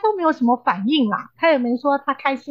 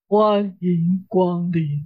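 very deep, low, sunk-down voice; 6 semitones lower than usual. Retelling a husband's greeting from behind the door, imitating a very deep voice. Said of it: "非常低沉的声音说".

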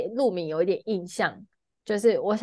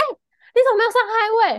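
mock shrill, very high, sudden startled yell; 12 semitones higher, 5 dB louder than usual. Retelling a man who suddenly woke up while the speaker drove: retelling a sudden yell. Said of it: "突然大叫说".

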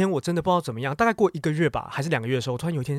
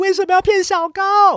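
shrill, loud, drawn-out shout, pitched way up; 7 dB louder than usual. Retelling how a classmate's girlfriend yelled beside him: imitating someone shouting. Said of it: "在他的旁边大喊说".

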